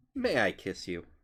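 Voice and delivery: uneasy, awkward, hesitant asking tone. Voicing a character asking for a kiss: awkward asking tone. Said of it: "feels insanely awkward about how she asked with her tone".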